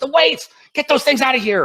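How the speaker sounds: put-on very high-pitched, shrill, frantic shouting. Retelling what a former ski instructor yelled at him, retelling someone yelling. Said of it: "he started yelling".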